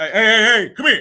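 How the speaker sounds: mock bravado tone. Describing the tone kids hear when women come in, imitating a bravado tone. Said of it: "That bravado when we come in, that tone".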